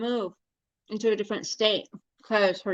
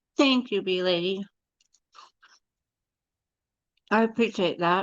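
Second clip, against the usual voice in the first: speech muffled by a full mouth. Thanking the bee lady while eating, talking with your mouth full. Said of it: "I'm talking with my mouth full".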